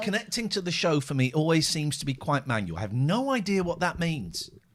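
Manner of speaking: ordinary talk, nothing marked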